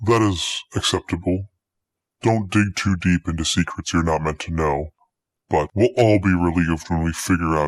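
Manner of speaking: very deep, distorted voice. A hidden figure answers a business owner in a distorted deep voice. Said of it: "That distorted, deep voice?".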